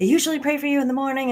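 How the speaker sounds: super-fast, high, rambling rapid-fire chatter. Retelling the speaker's mom answering a phone call, imitating her talking super fast. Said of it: "And she's talking super fast".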